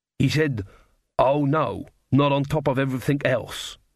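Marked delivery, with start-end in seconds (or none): none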